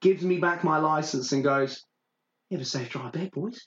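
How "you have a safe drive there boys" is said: quiet, menacing, ominous, acted out. Retelling a man handing back a license to four boys, mock-ominous tone. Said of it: "with the most ominous tone".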